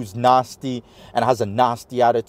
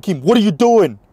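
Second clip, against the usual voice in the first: put-on Staten Island New York accent; 8 semitones higher, 6 dB louder than usual. Speaker retelling a man coming up and yelling at him, Joey's thick Staten Island Italian accent. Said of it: "the thick, you know, Italian, you know, you know, Italian accent, you know, Staten Island".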